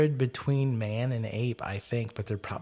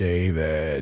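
deep, loud, drawn-out, stretched voice; 6 semitones lower, 5 dB louder than usual. Speaker retells something that was not a person calling his brother's name: deep voice. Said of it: "in a real deep voice go".

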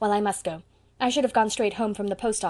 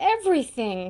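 plaintive moan; 3 semitones higher than usual. Asked by a friend what is wrong, she moans her answer. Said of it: "moaned Anne".

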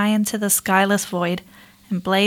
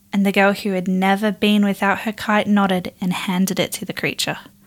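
ordinary delivery

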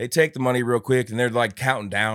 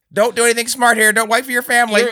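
put-on meek, unthreatening voice, higher, faster; 14 semitones higher, 9 dB louder than usual. Retelling what the guy in the mask said, imitating an unintimidating voice. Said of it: "the most unintimidating voice of all time".

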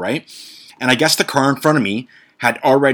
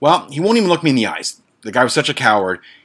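usual speaking voice

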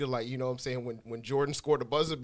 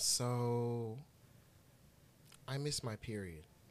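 mock very slow, sad tone, drawn-out "so"; 10 dB quieter than usual. Retelling a woman's reply when asked what was wrong, mimicking her sad tone. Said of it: "her tone was like real sad".

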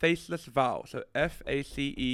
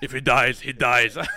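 put-on booming, deep, very loud German accent; 9 dB louder than usual. Talking about a match, the speaker quotes Josh Schmidt in a deep German voice. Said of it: "With them fucking deep German voice".

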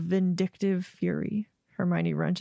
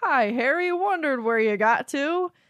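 weird fake bravado, pitched up, a bit high; 5 semitones higher than usual. Recapping a book scene, the speaker quotes Ron's weird put-on bravado. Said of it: "does this weird bravado voice and's like".

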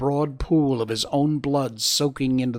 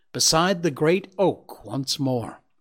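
ordinary delivery

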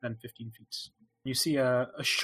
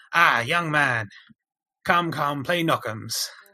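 hawking stall keeper voice, louder; 2 semitones higher, 7 dB louder than usual. Voicing the man heading the stall as he calls out: stall keeper calling out. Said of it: "calls out".

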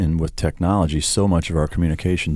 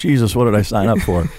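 usual speaking voice

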